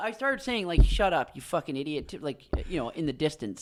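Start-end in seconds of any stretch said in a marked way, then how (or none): 0.8-2.1 low, half-swallowed, grumbled delivery. Retelling an insult said toward someone in the distance: retelling a half-muttered insult. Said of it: "half under your breath, half not".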